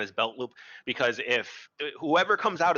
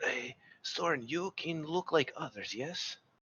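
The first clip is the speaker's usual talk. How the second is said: soft, hushed stage whisper under the breath; 3 semitones higher, 8 dB quieter than usual. Game master voicing a character who calls two others aside, half-whispering. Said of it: "And he's gonna whisper".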